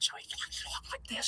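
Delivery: very quiet, soft, breathy whisper. Showing how someone with one vocal cord talked: Mickey Medlitz whisper impression. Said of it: "He's whispering".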